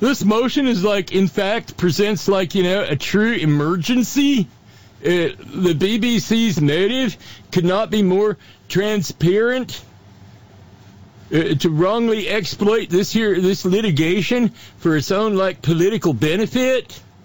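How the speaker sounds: put-on stupid voice. Speaker reads out the lawyers' motion in a stupid mocking voice. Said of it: "read that without the stupid voice".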